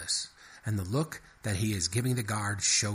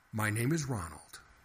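ordinary delivery

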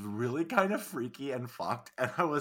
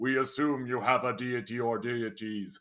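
mock pleasant deep voice. Retelling a disembodied cube's line to another speaker: imitating a nice deep voice. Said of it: "a disembodied cube in a nice deep voice".

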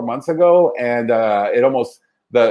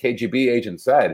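ordinary talk

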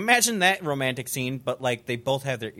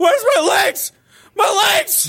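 very high, very loud agonized scream of pain; 10 dB louder than usual. Acting out a wounded man in the background of a scene: screaming in agony, acted. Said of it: "he's just screaming in the background".

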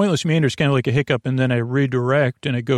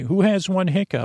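put-on judgmental, disapproving, pitched-up grandmother voice; 6 semitones higher than usual. Imagining what an inner grandmother would say: judgmental Nana voice. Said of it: "sounds like something judgmental, my na-, internal Nana would say".

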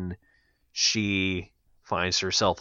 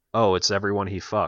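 put-on deadpan, flat delivery. Recounting one woman's reaction at a Women of Hitchcock special, retelling a deadpan remark. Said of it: "she deadpanned".

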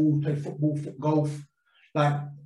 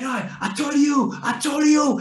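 mock wild, high, frantic celebratory screaming; 11 semitones higher than usual. Retelling a scorer's goal celebration aimed at a teammate: imitating Chef screaming. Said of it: "screaming at Jim".

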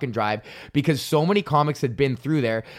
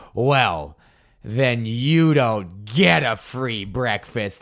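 mock-gleeful gloating tone, much slower; 3 semitones lower than usual. Retelling a woman denying a free breakfast, imitating her gloating tone.

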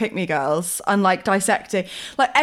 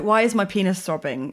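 ordinary talk

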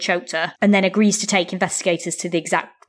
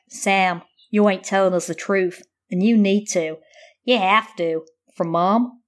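slow, wandering, fake put-on American accent. Recounting what he says to Sam, the speaker quotes him in a put-on American accent. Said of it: "I want to do this like in an American accent".

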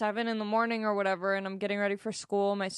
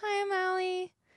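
put-on tiny, very high seven-year-old voice; 10 semitones higher than usual. Retelling introducing herself as a child, high-pitched seven-year-old voice. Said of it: "I sound like a 7-year-old. ... I'm very high-pitched".

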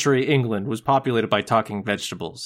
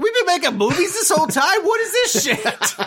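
put-on very high Jersey-accented rat voice. Imagining Rizzo wandering into a video store after 15 years, Rizzo voice. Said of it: "That's my New Jersey rat voice".

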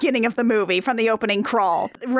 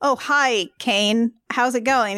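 ordinary delivery

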